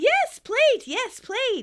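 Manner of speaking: acted, shrill, very loud, very high eager cry. Retelling a scene where Phoebe answers: imitating Phoebe excitedly. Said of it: "Phoebe excitedly".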